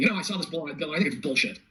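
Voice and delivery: plain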